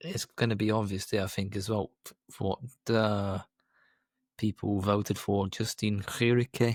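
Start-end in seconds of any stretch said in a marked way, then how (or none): 5.5-6.7 played-up, put-on Flemish-accented pronunciation. Naming the winner of a cycling award vote: flemish accent impression. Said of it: "That's my best Flemish impression".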